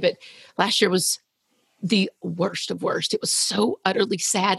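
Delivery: voice near tears, fighting not to cry. Responding to the other speaker, trying not to cry, holding back tears. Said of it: "I'm going to try not to cry".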